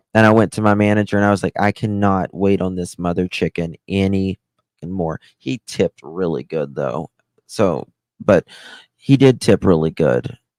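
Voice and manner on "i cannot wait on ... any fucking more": plain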